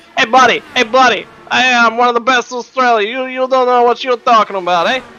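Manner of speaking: put-on New York accent. Retelling how he answered people who doubted his racing, in an attempted New York accent. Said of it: "Is that an attempt at a New York accent?".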